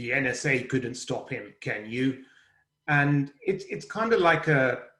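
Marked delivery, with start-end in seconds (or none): 0.0-2.2 corny, cheesy eighties movie-trailer voiceover narrator. Describing the voice the speaker usually hears: cheesy eighties movie narrator voice. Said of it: "that cheesy voice that says".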